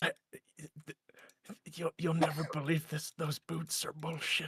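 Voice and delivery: whispering in character. Playing a drunk character who secretly tells a companion something: whispering in character. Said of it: "I'll whisper in his ear".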